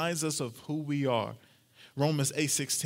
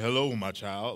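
scary, low-pitched voice; 5 semitones lower than usual. Imagining suddenly hearing God amid thunder and lightning, scary voice of God. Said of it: "this scary voice".

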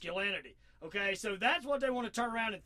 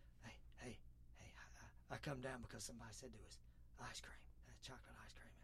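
hushed, breathy put-on voice, barely voiced; 10 semitones lower, 24 dB quieter than usual. Mocking a visit after a tragedy: Joe Biden impression. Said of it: "let me impersonate it".

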